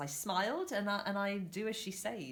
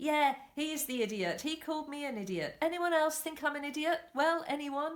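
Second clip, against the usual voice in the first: high shout broken with laughter; 7 semitones higher, 4 dB louder than usual. Recounting a checkout scene, the speaker quotes the cashier: retelling a shout while laughing. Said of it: "The cashier is now shouting and laughing".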